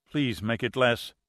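ordinary delivery

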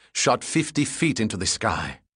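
ordinary delivery, nothing marked

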